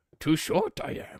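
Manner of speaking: croaky put-on voice, very high and loud. Doing an impression of Grandmaster Yoda: croaky Yoda voice. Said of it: "do an impression of Grandmaster Yoda".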